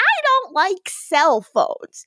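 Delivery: whiny, high-pitched, very slow and drawn out. Imitating Andy Rooney's segment on Sixty Minutes: whiny Andy Rooney impression. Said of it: "Why is your Andy Rooney impression Gilbert Godfrey?".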